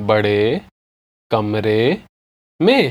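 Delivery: drawn-out, careful, slow, low-pitched phrasing. Teacher repeating a Hindi phrase for learners: said slowly. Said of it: "I'll say it again slowly".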